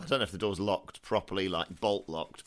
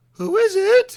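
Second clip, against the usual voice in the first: very high, loud put-on elderly woman voice; 17 dB louder than usual. In a roleplay game, a player's character calls out asking who it is: elderly woman voice. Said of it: "you mimic the voice of an elderly woman".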